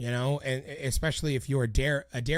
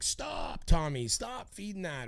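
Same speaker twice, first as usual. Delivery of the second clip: put-on called-out yell, slow, rising at the end; 3 semitones higher, 4 dB quieter than usual. Retelling what the manager yelled from the stage: imitating Chip yelling. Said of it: "yelling at me on stage, like".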